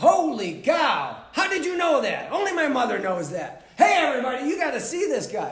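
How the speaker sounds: very loud, high, booming, swooping voice. Retelling a man's reaction after his iris was read: booming voice. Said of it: "He's got a booming voice that says".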